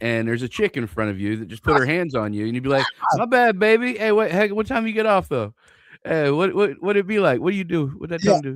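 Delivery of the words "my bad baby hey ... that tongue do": intoxicated, high flirty voice. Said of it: "you're hammered".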